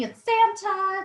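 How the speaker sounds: mock-excited yelling. Telling a story, the speaker acts out a girl greeting Santa, imitating an excited yell. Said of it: "She's like yelling".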